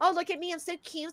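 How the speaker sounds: mocking. Mocking how she poses to hide her double chin: mocking imitation of her. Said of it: "when she makes that face she does".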